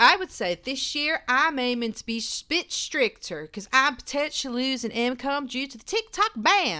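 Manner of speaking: put-on Southern American accent. Reading out a quoted woman's words, in a put-on Southern American accent. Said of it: "I can only do Southern American".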